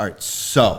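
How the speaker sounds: over-dramatic, theatrical windup delivery. Describing how Gibbs talks: imitating Gibbs being dramatic. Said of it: "he's gotta get really dramatic".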